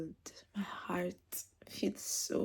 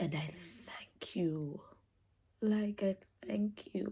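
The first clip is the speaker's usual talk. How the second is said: tearful, weeping through the words. Speaker thanking the one who carried and loved them: tearful, crying. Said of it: "I don't even know why I'm crying".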